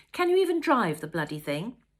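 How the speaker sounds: loud, sharp, angry voice. Reading a story aloud, a wife confronts her husband: rounding on him angrily. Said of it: "she rounded on him".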